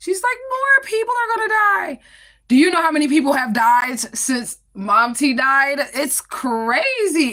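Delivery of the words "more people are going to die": very high, tearful, sobbing crying wail. Retelling what a crying mother said: imitating someone crying. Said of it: "And she starts crying".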